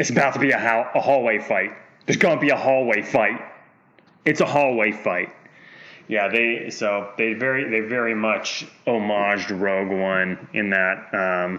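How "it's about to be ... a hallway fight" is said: usual speaking voice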